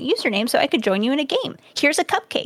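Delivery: ordinary talk, nothing marked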